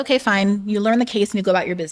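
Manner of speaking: ordinary talk, nothing marked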